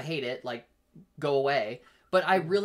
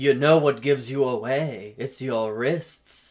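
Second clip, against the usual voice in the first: put-on loud little old man character voice; 2 semitones lower, 6 dB louder than usual. Retelling what an old man with a dog said to a friend, Katya old man voice. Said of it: "I'm going to do the like Katya old man voice".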